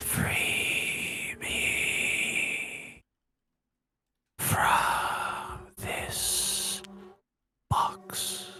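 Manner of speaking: hushed unholy whisper. Voicing the whispers heard in primordial; unholy whisper. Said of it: "whispers saying".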